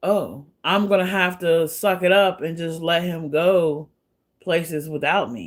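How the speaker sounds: ordinary delivery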